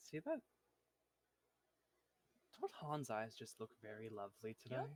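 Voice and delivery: whispering. Voicing a cursed eye that whispers into a player's ear: whispering cursed eye. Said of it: "the eye whispers into, into your ear".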